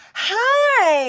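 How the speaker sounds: very high, very loud, shrill, drawn-out squeak. Describing someone hit by an embarrassment dart, like a sitcom scene, high squeaky Ross Geller voice. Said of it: "Your voice gets all high and squeaky".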